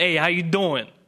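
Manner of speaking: bad, heavy, thick New Jersey accent. Speaker recalls showing up as a bad boy from jersey: thick jersey accent. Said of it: "thick Jersey accent".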